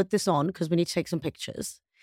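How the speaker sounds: normal talking voice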